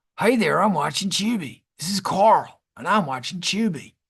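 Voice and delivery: faked, put-on American accent. Demonstrating a bit for the listener, in a put-on american accent. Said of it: "you got to do your American accent".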